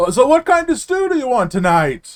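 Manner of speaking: distant, very high, loud shout. Voicing someone shouting down a stairwell about dinner: shouting down a stairwell. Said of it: "shouting down a stairwell".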